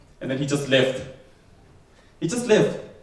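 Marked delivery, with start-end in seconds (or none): none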